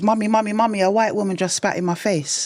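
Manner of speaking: put-on with a Jamaican accent. Retelling a childhood memory, the speaker quotes a big sister in a Jamaican accent. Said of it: "she says it in a Jamaican accent".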